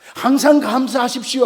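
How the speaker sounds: high, loud, preaching shout in pulpit style.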